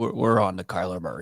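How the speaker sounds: put-on voice, gravelly and deep. Speaker imagines Bill Belichick answering, in a gravelly Bill Belichick impression. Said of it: "He says it in that like gravelly voice".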